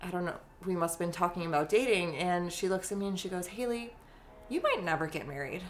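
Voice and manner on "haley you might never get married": mock earnest, dead-serious delivery. Retelling what a mom said once in the kitchen: imitating mom saying it seriously. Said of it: "she said it so seriously".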